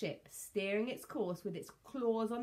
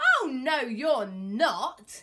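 very loud, very slow, swooping yell; 4 semitones higher, 10 dB louder than usual. Narrator reads the captain answering the Tyrannosaurus Rex, yelling. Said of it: "yelled Captain Flynn and charged".

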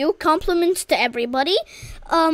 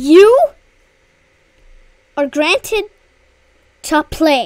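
loud, stretched-out sarcastic tone; 6 dB louder than usual. Streaming a game, telling another player he may play, sarcastic. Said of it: "I'm being sarcastic".

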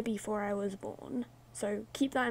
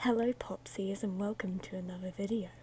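spooky put-on creepy voice, lower and quieter; 3 semitones lower, 6 dB quieter than usual. YouTuber restarts the video intro to viewers in a creepy voice. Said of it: "I should have started it with a creepy voice".

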